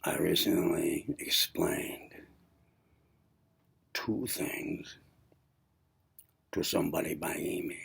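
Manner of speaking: soft-spoken, quiet, hushed talking. Recording a video while his wife sleeps six feet away, talking quietly. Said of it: "I'm talking quietly".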